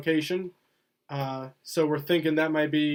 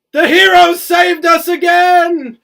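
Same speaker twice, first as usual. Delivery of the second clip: booming delivery, very loud and very high-pitched; 14 semitones higher, 15 dB louder than usual. Gorge Lopez steps out from behind the curtain: Gorge Lopez booming voice. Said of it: "he casts his booming voice again".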